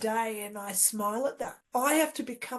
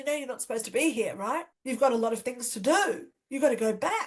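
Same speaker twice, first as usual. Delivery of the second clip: put-on angry woman voice, scolding. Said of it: "She was really angry".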